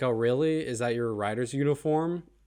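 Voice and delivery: ordinary talk, nothing marked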